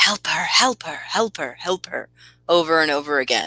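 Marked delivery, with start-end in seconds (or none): 0.0-2.1 hushed whispers. Voicing whispers in a player's head: whispering. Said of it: "you hear the whispers that just say".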